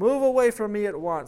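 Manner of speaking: booming, thunderous, high-pitched scream. Narrator reading a story voices a man ordering a demon away, thunderous scream. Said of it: "screams the man in a thunderous voice".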